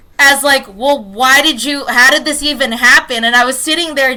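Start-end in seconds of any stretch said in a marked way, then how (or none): 0.7-3.3 put-on scolding, lecturing tone, louder. Retelling being blamed for a broken drawer: imitating a lecturing tone. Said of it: "a kinda lecture".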